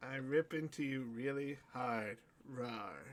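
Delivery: suggestive, innuendo-laden, dirty-sounding delivery. Repeating a line about monsters ripping into a character, saying it suggestively. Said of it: "I did say it that way, though".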